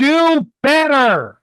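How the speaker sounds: teasing pretend yell, high and swooping. Urging another player on during a game turn: mock yelling. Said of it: "now I'm just yelling at you".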